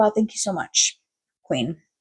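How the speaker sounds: heavily sarcastic, dripping with sarcasm. Recalling someone explaining a whole movie plot, with sarcastic thanks. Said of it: "obviously didn't say it with that much sarcasm".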